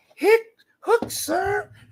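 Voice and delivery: tiny, very high-pitched squeaky voice. Retelling a scene where an officer, asked for a name, answers in little squeaky voice. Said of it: "That little squeaky voice".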